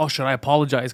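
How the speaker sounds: normal talking voice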